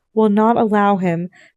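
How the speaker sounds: ordinary delivery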